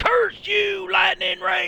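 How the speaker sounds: put-on full-on country accent with very high pitch. A banished villain curses the Lightning Rangers, in a full country accent. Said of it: "I went full country on that".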